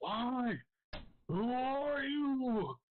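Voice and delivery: very high, very slow, full-lung scream. Voicing an enemy charging in during a fight: screaming at the top of his lungs. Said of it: "screaming out the top of his lungs".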